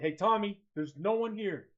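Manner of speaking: loud, calling yell. Playing a character calling up to Tommy at the wheel: yelling. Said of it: "yell at Tommy".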